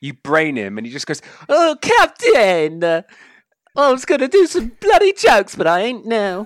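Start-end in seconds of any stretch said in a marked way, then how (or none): 1.5-6.5 very high, sulky, petulant, drawn-out hissy fit. Game master voicing a character who was just hit, in a petulant hissy fit. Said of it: "he just storms off having a hissy fit".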